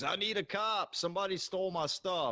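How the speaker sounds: acted drunk man, high scream at full volume. Retelling a man running around the beach, retelling a top-of-lungs scream. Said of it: "screaming at the top of his lungs".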